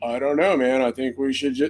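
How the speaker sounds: level, flat, soft, going-through-the-motions monotone. Speaker imitating a film's actors' line delivery, mocking flat monotone acting. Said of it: "it felt just really monotone".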